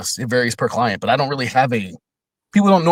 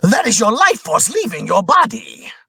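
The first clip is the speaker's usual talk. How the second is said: very high, manic, crazed demon voice; 10 semitones higher than usual. Showing another demo reel villain voice, crazy demon voice. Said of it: "crazy demon".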